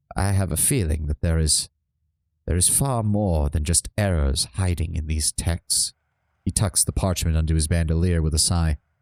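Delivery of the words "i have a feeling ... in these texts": solemn, very somber voice. Voicing Lantry as his gaze falls to the ground, in Lantry's somber tone. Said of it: "give Lantry a very somber tone".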